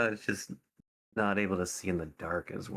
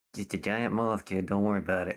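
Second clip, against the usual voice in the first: heavy, laid-on Jersey Italian accent. Retelling what he told a curious kid: jersey italian accent. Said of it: "Gave that a Jersey Italian accent".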